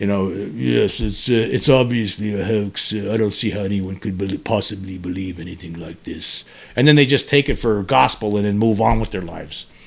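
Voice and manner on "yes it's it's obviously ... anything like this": put-on refined English accent, slow, elegant, drawn out. Describing how Americans hear an English accent, imitate Mick West's English accent. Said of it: "when they hear someone with an English accent like Mick West".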